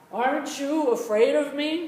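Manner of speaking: high, loud, booming put-on devil voice.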